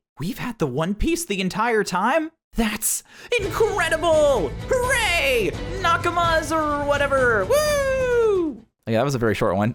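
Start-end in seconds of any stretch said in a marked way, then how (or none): 0.2-8.7 very high, slow, stretched-out sing-song happy cartoon voice. Performing a short podcast skit, in a happy Luffy voice. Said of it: "your happy Luffy voice".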